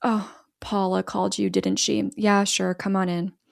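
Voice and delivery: put-on nonchalant voice. Retelling a movie scene where Eduardo lets the authorities in: nonchalant Eduardo imitation. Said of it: "very nonchalant".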